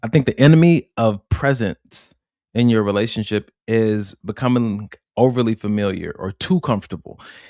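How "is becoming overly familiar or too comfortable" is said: the word "too" stressed, leaned on. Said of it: "I have to say it with that emphasis on it".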